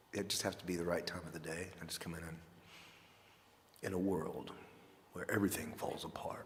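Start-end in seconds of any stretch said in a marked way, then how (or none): 3.8-6.4 deep movie-trailer narrator voiceover voice. Performing voiceover talking after another speaker suggests it: deep voiceover voice. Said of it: "you could do voiceover talking".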